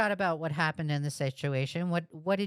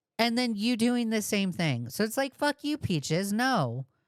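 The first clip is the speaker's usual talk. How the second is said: ordinary talk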